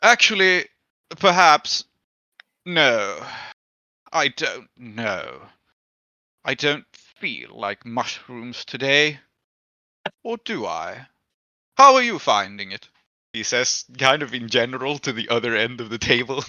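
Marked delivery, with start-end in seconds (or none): 0.0-12.9 pensive character voice, louder, slower. At the table, a lord speaks after a servant takes his plate, pensive Lord Scurlock voice. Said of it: "looks after it pensively, and he says".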